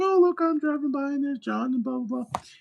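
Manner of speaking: very high-pitched voice. Retelling pretending to be coworkers walking by: imitating a coworker. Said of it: "I'd pretend to be them".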